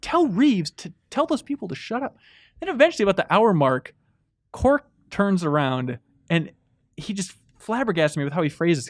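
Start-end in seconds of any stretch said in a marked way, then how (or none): 0.0-2.2 put-on whisper, higher. Retelling own past words in a movie theater: imitating own whisper. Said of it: "I'm whispering to Cork".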